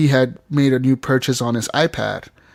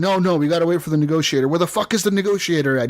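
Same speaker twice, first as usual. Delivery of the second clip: put-on angry commanding voice, higher pitch; 4 semitones higher than usual. Retelling a game scene, the swat team commander's line: imitating an angry commander. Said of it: "He's all pissed off".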